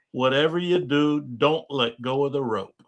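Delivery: firm, pointed, emphatic, stressed delivery. Retelling a warning to a first-time skier: imitating own emphatic warning. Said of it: "with emphasis said".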